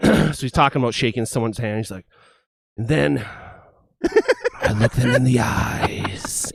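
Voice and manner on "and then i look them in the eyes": smooth, deep, sultry, slow drawl. Act out the man in the documentary talking about shaking someone's hand, imitating a deep, sultry voice. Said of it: "he's like that deep, sultry voice".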